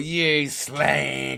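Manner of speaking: put-on jovial teasing tone. Retelling how a friend meant an insult to passing girls: imitating a jovial insult. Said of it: "he meant it in that jovial".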